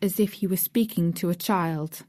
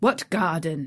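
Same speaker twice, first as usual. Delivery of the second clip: rough, gruff voice; 2 semitones lower than usual. Reading a gardener's sudden question to Mary: rough voice. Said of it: "he said in a rough voice".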